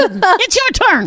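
high, slow, mock nagging wife voice.

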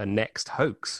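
ordinary delivery

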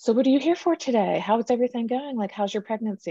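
high, cheery, rosy chattering voice. Retelling how a nurse greeted her at an appointment: imitating a cheerful nurse. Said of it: "just so cheerful and rosy".

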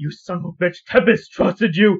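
enraged, furious, high-pitched yelling outburst. A game narrator voices an acolyte trying to punch the player: furious outburst. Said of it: "this person attempted to punch you".

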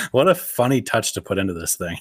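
ordinary talk

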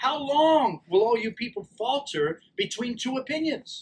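high-pitched yelling out.

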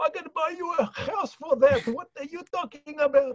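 put-on Greek accent, pitched well up. Retelling his late father's reaction, speaker quotes him, imitating his greek accent. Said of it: "in his Greek accent".

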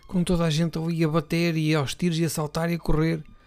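normal talking voice

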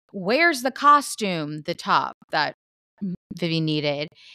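acted-out mad, accusing, angry, demanding tone. Retelling a reality show scene, imitating someone angry. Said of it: "She's so mad".

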